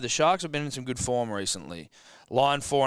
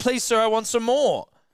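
put-on high, louder, begging young boy's voice. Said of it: "You're going back".

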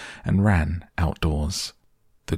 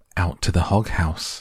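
ordinary delivery, nothing marked

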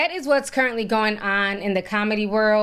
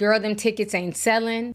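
plain

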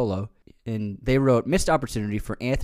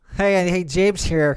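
put-on nasally voice; 7 semitones higher, 5 dB louder than usual. Pretending to be James for the audience: nasal James impression. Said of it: "I'll have to take on a nasally voice".

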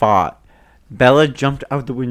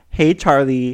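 plain

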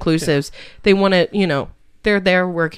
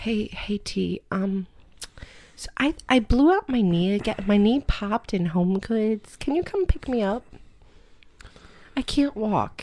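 hushed half-whisper with no voice at all; 4 semitones higher, 6 dB quieter than usual. Retelling a phone call asking for a pickup: imitating Danielle's half-whisper. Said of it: "And she's whispering".

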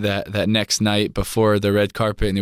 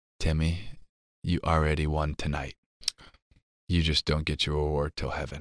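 soft, hushed half-whisper; 6 semitones lower, 8 dB quieter than usual. Retelling what mom half-whispered before an award announcement: imitating mom's half-whisper. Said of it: "she whispers in my ear".

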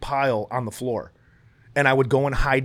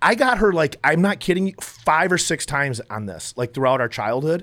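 ordinary talk

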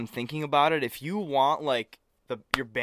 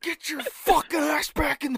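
put-on scream, higher pitch. Retelling a dad catching a kid awake on Christmas night: imitating a dad screaming. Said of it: "screamed at him".

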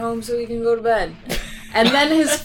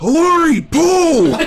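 hulking giant voice, much higher, louder; 6 semitones higher, 7 dB louder than usual. Telling a story, speaker voices the giant hulking shape at the bedroom door. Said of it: "this giant hulking shape says".

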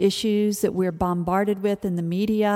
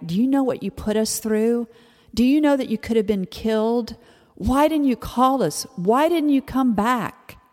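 mock scolding half-yell, mild and held in; 3 semitones higher than usual. Retelling how a mom screamed at her daughter, retelling a scream. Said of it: "she just started screaming at her like".

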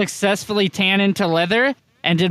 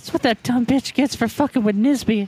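put-on whisper, higher in pitch; 5 semitones higher than usual. Whispering to Edgar in character: whispering in character. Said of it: "I whispered to Edgar".

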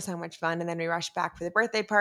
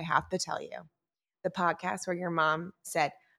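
normal talking voice

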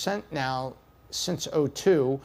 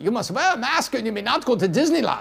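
thick put-on German accent, pitched up; 7 semitones higher, 4 dB louder than usual. Retelling the COVID rules they were told, in a heavy German accent. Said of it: "with some heavy German accent".

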